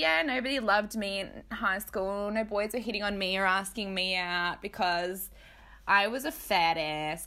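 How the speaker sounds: ordinary talk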